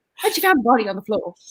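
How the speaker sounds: put-on British accent, thriller narrator style. Retelling an audiobook that played out loud at the gym, in a British accent. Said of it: "a British accent going like".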